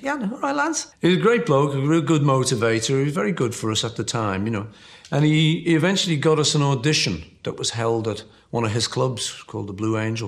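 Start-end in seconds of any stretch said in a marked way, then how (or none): 0.0-0.9 put-on very high voice with a slight Welsh accent. Recalling the band's early manager in Liverpool, imitating Alan Williams's high voice. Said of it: "a little sort of high voice".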